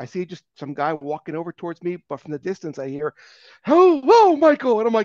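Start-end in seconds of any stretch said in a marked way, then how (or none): 3.6-4.8 booming, very high, loud announcer-style delivery. Retelling hearing a voice call out from a distance: Howard Finkel voice. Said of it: "it was the Howard Finkel voice".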